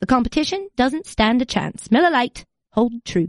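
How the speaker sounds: put-on British accent, ad-read delivery. Host reads a beer advertisement aloud in a put-on British accent. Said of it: "I'm just going to do it in whatever accent".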